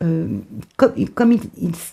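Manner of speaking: stumbling, tripping over words with repeated false starts. Mid-explanation to the audience, the speaker stumbles over words. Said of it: "je bafouille".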